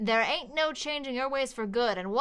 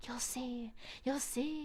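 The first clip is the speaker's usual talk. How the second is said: eerie, hushed, ominous echoing whisper; 11 dB quieter than usual. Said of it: "I am whispering that, and it is echoing and ominous".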